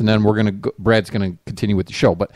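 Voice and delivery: plain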